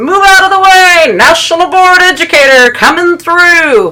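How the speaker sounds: teasing, high, loud mock announcer-style yell.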